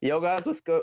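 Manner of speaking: voice breaks, very high and cracking. Opening a podcast episode to listeners, voice crack. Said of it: "I just had a dirty voice crack".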